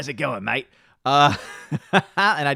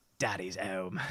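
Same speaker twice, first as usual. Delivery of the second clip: hushed put-on character voice, barely above a hush; 6 semitones lower, 14 dB quieter than usual. Asked for an impression of Butcher's catchphrase, the speaker does Billy Butcher voice. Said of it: "give us an impression of Butcher's Daddy's Home".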